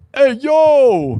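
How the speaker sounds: high-pitched "yo" stretched out long. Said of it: "I was full on John Travolta".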